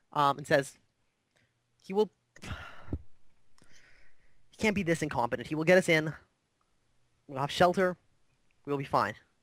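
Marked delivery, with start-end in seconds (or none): 1.8-9.1 calmed down, settled, composed, calm again. Voicing a character who calms down after nearly storming off: calmed down. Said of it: "she calms down".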